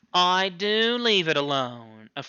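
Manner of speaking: hollow, very drawn out. Reading fiction aloud, the accused answers the charge: hollow voice. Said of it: "affirmed the accused hollowly".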